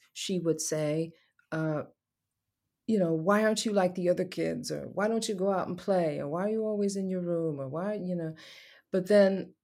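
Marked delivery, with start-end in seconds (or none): none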